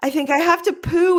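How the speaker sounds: very high voice, right on the verge of crying. Retelling own words from the early postpartum period: imitating own near-tears. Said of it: "and I'm almost crying".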